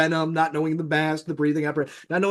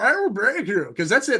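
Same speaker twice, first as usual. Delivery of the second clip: put-on villain voice; 5 semitones higher than usual. Speaker decides to switch into a Bane voice. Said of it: "I should talk like just in the Bane voice of now".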